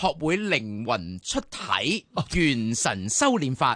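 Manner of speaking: slow, drawn-out, grand, each word slow. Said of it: "我讀畀大家聽".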